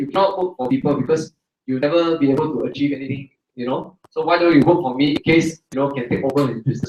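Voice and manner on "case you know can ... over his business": normal talking voice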